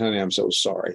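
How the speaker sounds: acted defeated, dejected tone. Recounting what they said to their spouse, retelling it in a defeated way. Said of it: "I just said in a very defeated way".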